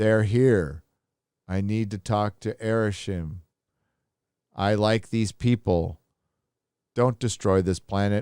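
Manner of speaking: deadpan, stoic, emotionless flat monotone. Mocking the acting in the Eternals film, say it in a mimicked stoic monotone. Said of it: "everybody played this stoic, monotone".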